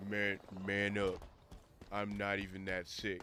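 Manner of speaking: put-on deep voice, slow and drawn out. Imitating what she tells him when he says he is sick, deep voice. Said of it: "She has like the deep voice".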